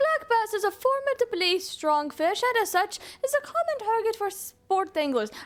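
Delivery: strained, forced put-on Irish accent, very high pitch. Speaker tries out a voice while reading a passage, in a forced irish accent. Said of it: "I sound like I'm trying to force myself to be Irish".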